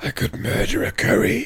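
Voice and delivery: very high, squeezed, creaky, rasping voice. Retelling a line from the book after a build-up: Death voice. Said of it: "in his, whichever voice you've got in your head, in my case, he turns to him and goes".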